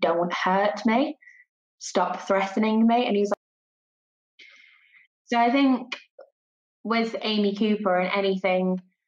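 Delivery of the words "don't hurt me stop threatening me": ordinary talk, nothing marked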